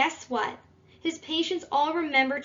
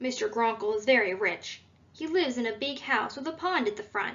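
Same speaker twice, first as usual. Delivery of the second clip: usual speaking voice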